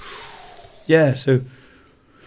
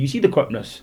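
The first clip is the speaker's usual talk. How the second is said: plain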